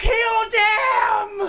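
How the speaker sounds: very high, furious war-cry scream. Voicing a character in the game who attacks: screaming. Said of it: "And he screams".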